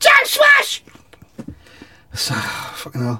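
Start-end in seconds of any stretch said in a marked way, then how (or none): 0.0-0.8 very high, loud shout. Retelling how a bloke leapt from the pool water: imitating a shout. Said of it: "under the water and shouts".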